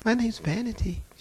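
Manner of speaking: hushed, very soft, sweet, demure voice. Retelling a demon answering when asked its name, imitating a sweet demure voice. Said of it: "She sounded just as sweet and demure".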